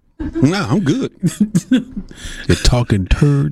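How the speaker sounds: put-on high, swooping pimp voice. Repeating what he said to the others, in his pimp voice. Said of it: "He said that with his pimp voice".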